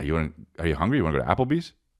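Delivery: quick, rattled-off South Dakota accent. Show your impression of someone after they go to Dillard's, imitating someone in South Dakota. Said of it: "here's my impression of someone uh, after they go to Dillard's".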